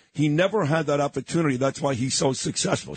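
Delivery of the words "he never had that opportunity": plain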